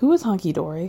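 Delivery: play-acted grave, sincere, earnest, somber tone. Retelling a cast member's question to another: imitating an earnest, somber question. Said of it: "very earnestly and somberly".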